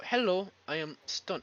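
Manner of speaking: put-on, attempted Korean accent. Speaker tries out an accent while introducing themself; attempted Korean accent. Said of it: "I can try to do a Korean accent".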